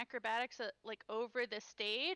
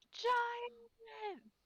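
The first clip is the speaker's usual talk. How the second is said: roaring, bellowing shout, much higher; 11 semitones higher than usual. In the game, the speaker's character warns everyone of a giant with a roaring shout. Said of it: "literally roaring out".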